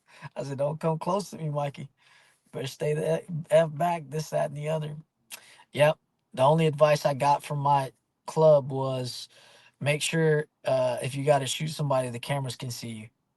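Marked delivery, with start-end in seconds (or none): none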